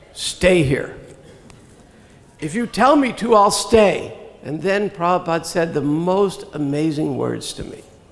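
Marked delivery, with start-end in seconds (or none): 0.1-0.9 flat gray voice. Recalling being told whether to stay or return, quoting the reply in a gray voice. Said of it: "again in a gray voice".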